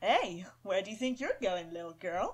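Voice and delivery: flirtatious, flirty male voice. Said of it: "basically sound flirty with that".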